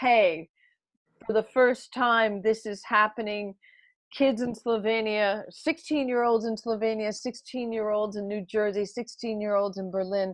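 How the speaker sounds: normal talking voice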